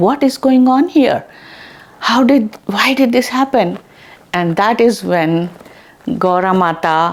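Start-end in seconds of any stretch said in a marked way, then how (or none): 0.0-3.8 very surprised, amazed, high astonished outburst. Retelling a story as characters find their offerings turned to gold: acting very surprised. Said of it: "they both are very surprised".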